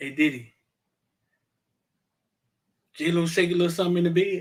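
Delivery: low, soft, secretive half-whisper. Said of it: "Why you whispering though".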